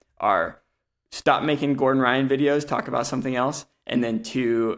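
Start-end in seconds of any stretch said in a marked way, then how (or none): none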